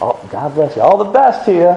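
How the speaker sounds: mocking, sarcastic, sing-song delivery. Retelling how someone mocked Ahab, retelling a sarcastic blessing. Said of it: "he's making fun of me".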